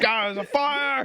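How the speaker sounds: panicked caveman shout. Retelling waking up to a fire and yelling: imitating own panicked caveman yell. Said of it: "You're going to caveman mode".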